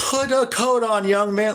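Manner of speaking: shrill, very high-pitched screaming. Retelling people yelling at him while out on errands: imitating someone screaming. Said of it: "like screaming at me".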